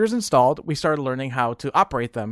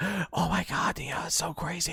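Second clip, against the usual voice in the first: very soft, slow, hushed, excited, drawn-out whisper; 12 dB quieter than usual. Retelling how the students reacted to the principal's news: imitating classmates whispering. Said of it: "And they're whispering".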